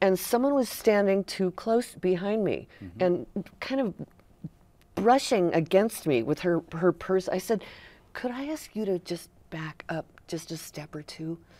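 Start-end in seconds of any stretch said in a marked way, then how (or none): 8.1-11.4 soft, very gentle, polite tone. Recounting what was said to someone standing too close behind, retelling it very gently. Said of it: "I said it very gently like that".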